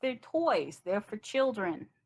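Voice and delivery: put-on very old elf woman voice. Voicing a very old elf woman who turns the visitors away: voicing a very old elf woman. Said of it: "and she says".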